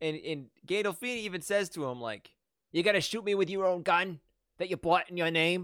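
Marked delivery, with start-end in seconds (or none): 2.7-5.6 reasonable-sounding, matter-of-fact tone. Retelling a movie line spoken by Gandolfini: James Gandolfini impression. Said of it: "pretty good James Gandolfini impression".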